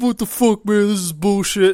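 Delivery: put-on angry, pissed-off outburst. Retelling how a player got pissed off about waiting: imitating a pissed-off player. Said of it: "one guy got all pissed off".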